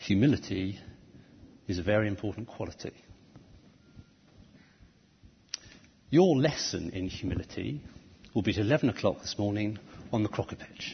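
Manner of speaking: put-on, faux serious tone. Addressing the members on behalf of the leaders: mock-serious voice. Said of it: "I said in a sort of mock serious voice".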